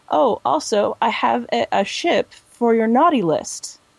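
very sweet tone.

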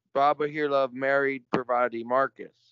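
ordinary delivery

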